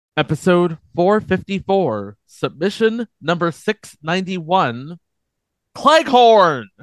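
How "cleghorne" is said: shouted, louder. Podcast host announcing a listener submission by number, shouting the title. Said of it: "I have to shout it".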